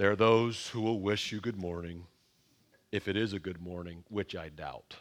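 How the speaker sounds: put-on gloomy deadpan. Sharing a sampling of his responses to situations, imitating deadpan pessimism. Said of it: "deadpan pessimism".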